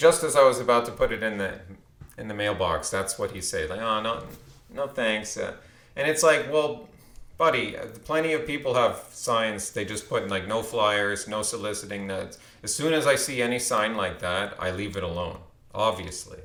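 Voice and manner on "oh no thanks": ordinary talk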